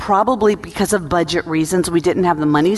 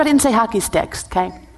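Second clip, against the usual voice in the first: ordinary talk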